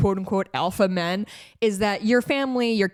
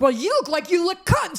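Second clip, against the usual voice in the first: shrill, very high, unglued screaming outburst; 9 semitones higher than usual. Retelling how a man reacted to the host's comment, imitating someone screaming. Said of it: "he just starts screaming like".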